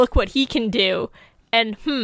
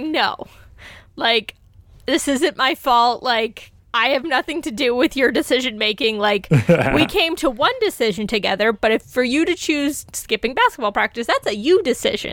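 ordinary talk, nothing marked

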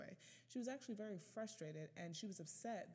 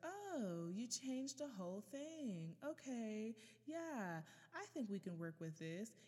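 mock grudging, passive-aggressive tone; 3 semitones higher than usual. Retelling her feedback on a rewritten article, in a mock passive-aggressive tone. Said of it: "in that passive-aggressive tone".

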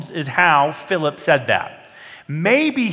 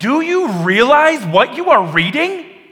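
mock eager, excited, enthusiastic, high and raised voice; 7 semitones higher, 6 dB louder than usual. Suggesting Philip's tone when asking the reader, imitating an enthusiastic question. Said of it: "I suspect it was more enthusiastic".

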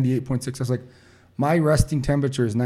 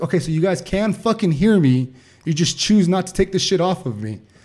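raised, loud yelling outburst; 5 semitones higher, 4 dB louder than usual. Retelling yelling at onlookers who did nothing to help, reenacting a yell. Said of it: "I'm still yelling at them".

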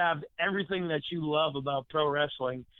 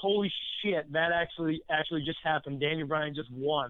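ordinary talk, nothing marked

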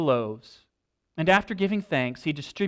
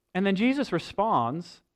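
ordinary talk, nothing marked

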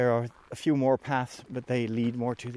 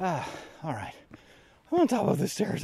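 winded, breathless panting, pitched up; 6 semitones higher than usual. Speaker reaching the top of the stairs: out of breath. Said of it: "I'm totally out of breath".

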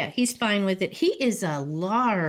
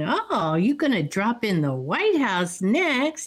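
put-on laughing while talking. Retelling a woman teasing a man sent to the boss's tailor, imitating her laughing. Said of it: "she starts laughing and going".

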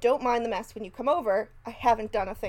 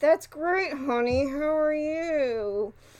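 put-on speaking through gritted teeth; 4 semitones higher than usual. Retelling a jealous husband answering his excited wife, through gritted teeth. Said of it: "it's through gritted teeth".

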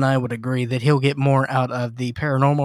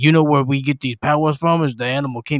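weighty, powerful, dramatic monologue-style delivery. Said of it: "That's my [name], uh, voice".

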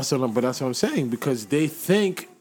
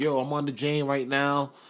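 imitated male American accent; 4 dB quieter than usual. Mocking a copycat who gained followers from Toronto, in his American accent. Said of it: "he with his American accent".

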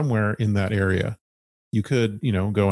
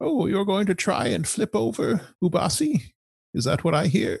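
put-on dulcet, sweet old woman voice, pitched very high; 11 semitones higher than usual. Narrating a game scene, voicing the old lady from the marketplace in a sweet old lady voice. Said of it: "the dulcet tones of that old lady".

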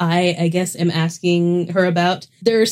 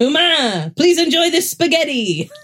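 high cat voice with French accent; 9 semitones higher than usual. Showing how lines were read like a French cat: French cat voice. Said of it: "I was reading it like this French cat".

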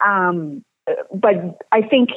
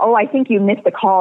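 ordinary delivery

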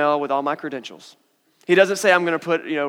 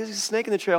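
matter-of-fact, unbothered, soft and calm; 4 semitones higher, 6 dB quieter than usual. Retelling how she warned the group on the trail, acting out calm no-big-deal. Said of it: "but she was just like".

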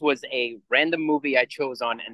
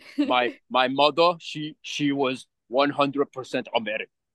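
put-on slow, heavy, thick Austrian action-star accent. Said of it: "just be like fucking Schwarzenegger".

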